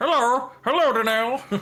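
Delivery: very high, piping, squeaky-high voice. Voicing a pumpkin decoration held up to talk: voicing the Pumpkin Moon Man. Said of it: "I don't know why he has that voice".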